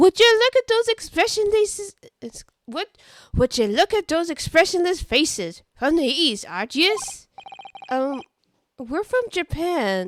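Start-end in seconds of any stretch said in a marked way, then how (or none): 0.0-7.0 put-on Irish accent, much higher, louder. Voicing a character addressing travelers from Japan, in an Irish accent. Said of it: "is he Irish?".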